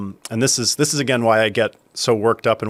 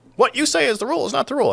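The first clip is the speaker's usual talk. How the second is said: very high, grating, obnoxious put-on know-it-all voice. Quoting what the speaker wrote about a rule, put-on annoying voice. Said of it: "I use that annoying voice because I'm sure it was obnoxious".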